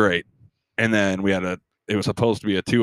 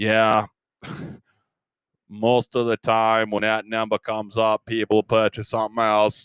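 flat, robotic monotone. Retelling what the man told him when he bought something, robot-like voice. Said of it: "He talked like a robot".

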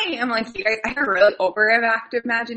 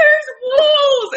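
very high, loud sobbing through tears; 6 dB louder than usual. Retelling how she answered Dad's question, imitating someone crying. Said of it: "And Reggie's in tears".

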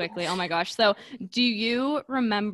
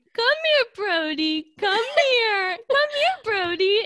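shrill, very high, loud yell; 14 semitones higher, 5 dB louder than usual. Telling an embarrassing story, the speaker re-enacts calling the dog: retelling yelling at the dog. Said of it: "I'm yelling at the dog going".

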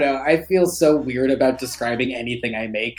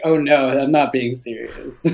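ordinary delivery

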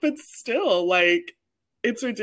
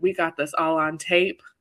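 amateur, put-on country accent. Retelling what the person recording the video said, in an attempted country accent. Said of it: "That was my attempt at a country accent".

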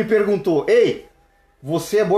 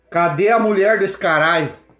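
normal talking voice

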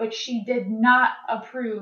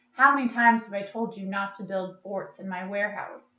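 mock-deadpan delivery, much quieter; 5 dB quieter than usual. Speaker retells a quoted line from a scene, retelling it deadpan. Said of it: "in a deadpan voice says".

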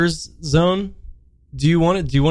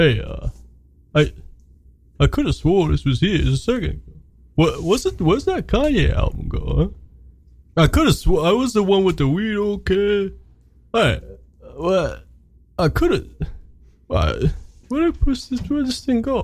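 rambling delivery in a star-style voice; 4 semitones higher than usual. Acting out a made-up scene of Sly Stallone losing an album: Sly Stallone impression. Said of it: "remember I was doing Sly Stallone?".

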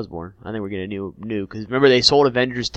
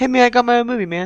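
very high-pitched rock creature voice; 14 semitones higher, 3 dB louder than usual. Chatting about Marvel movies, doing a Korg voice. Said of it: "My Korg impression is not good".

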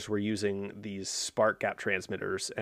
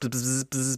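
higher, buzzing spark sound effect, like telegraph. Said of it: "professional sound effects we have on this podcast".

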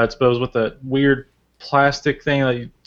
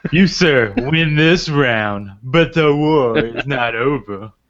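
odd, silly put-on voice, very slow and drawn out. Conceding a joke round to the others in a weird voice. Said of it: "That was a weird voice".

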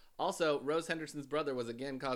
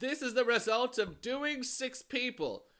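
bad, unconvincing put-on English accent, sing-song; 11 semitones higher, 5 dB louder than usual. Quote an arrested man's first comment to the prison reception officer, in a bad English accent. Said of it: "we're still doing a Chicago accent".

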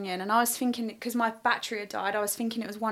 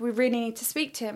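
plain

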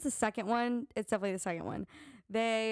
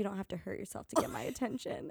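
put-on deep whisper; 4 dB quieter than usual. Retelling what Jeremiah says when he catches Belly: imitating Jeremiah's deep whisper. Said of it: "the deepest, like, whisper you could possibly conjure".

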